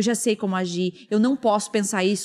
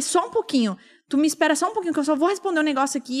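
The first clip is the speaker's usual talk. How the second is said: put-on high, huffing, fuming, dismissive tone; 6 semitones higher than usual. Retelling arriving at therapy and telling the therapist to wait: imitating own fuming huffing. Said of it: "eu cheguei bufando".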